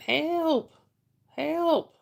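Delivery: loud screaming. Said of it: "always scre-, screaming".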